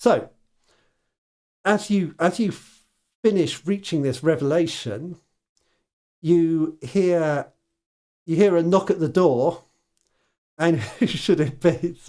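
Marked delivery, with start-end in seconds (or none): 10.6-12.0 speech broken up by laughter throughout. Describing a knock at the door, laughing while talking. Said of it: "I'm just laughing".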